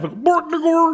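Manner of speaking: silly comic Swedish cook voice, very high. Showing how a band name gets read: Swedish Chef voice. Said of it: "I say it like the Swedish Chef".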